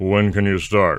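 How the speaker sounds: put-on deep-voiced radio announcer voice. Recounting a short Friday interview, quoting the radio guy: imitating a deep voice. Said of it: "he had this deep voice, and he would talk like this".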